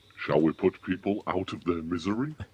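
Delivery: deep, low, scary and menacing voice. Speaking to the group during a guessing game, in a scary Santa voice. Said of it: "that's a very scary voice".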